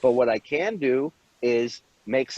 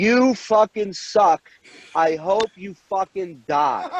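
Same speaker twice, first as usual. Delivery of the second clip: put-on high-pitched screaming; 6 semitones higher than usual. Retelling a stranger in a chair screaming at the speaker: imitating a woman screaming. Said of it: "she's screaming at me".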